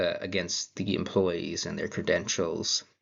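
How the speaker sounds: normal talking voice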